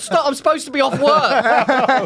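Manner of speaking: mock startled, high, genuinely panicked-sounding voice. Retelling a reaction at a car: imitating Simon Wozniak panicking. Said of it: "he was genuinely panicked, going".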